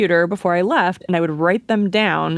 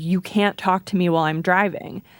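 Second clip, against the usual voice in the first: put-on angry voice. Retelling what a bus driver said to a lost passenger: imitating an angry bus driver. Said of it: "he got really angry and was like".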